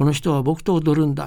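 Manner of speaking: ordinary delivery, nothing marked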